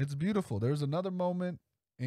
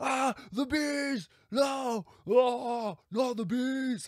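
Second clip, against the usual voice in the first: mock very high, shrill, very stretched-out screaming; 11 semitones higher, 3 dB louder than usual. Imitating Nick screaming about the bees: screaming as Nick. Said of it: "Not when I'm screaming".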